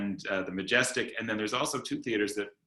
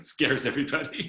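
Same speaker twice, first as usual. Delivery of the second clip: laughing while speaking, pitch raised; 5 semitones higher than usual. In a group discussion about live performance, a speaker remarks, laughing while speaking.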